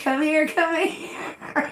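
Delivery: high yell. Retelling spotting creatures while fishing, calling a friend over: retelling own scream. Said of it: "Screaming him".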